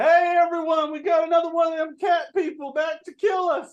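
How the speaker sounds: high, shrill yell. Game master voices a man yelling into the bar, yelling into a bar. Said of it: "he yells into the bar".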